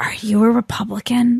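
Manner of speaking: quiet, hushed, confiding, secretive whisper. Retelling a woman pulling the speaker aside to ask a question, retelling a hushed whisper. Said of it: "had her hushed tones".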